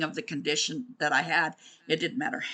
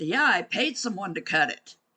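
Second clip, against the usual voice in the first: dry, sarcastic tone; 4 semitones higher than usual. Retelling own reply to someone asking about a throat scar: retelling a sarcastic reply. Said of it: "This is how sarcastic I get".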